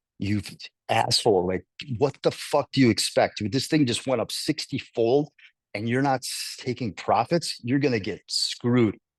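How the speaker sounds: plain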